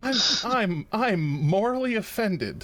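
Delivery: lighthearted, laughing through the words, very high. Claiming to be morally offended to the other players: lighthearted, laughing voice. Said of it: "He says with such a lighthearted voice".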